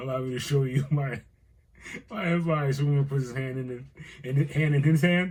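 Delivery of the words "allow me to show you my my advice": voiced like a comic-book villain. Retelling how Brainiac offered his hand: imitating Brainiac. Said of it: "Brainiac's, like, had his hand out and he's like".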